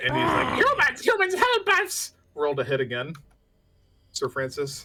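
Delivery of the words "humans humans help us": shrieking, very high and loud. Game master voicing a creature just slashed with an axe, shrieking. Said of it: "he just shrieks".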